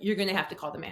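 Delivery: mock no-nonsense, firm yet courteous directive tone. Retelling asking a server to call the manager: imitating own directive tone. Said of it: "I'm just directive".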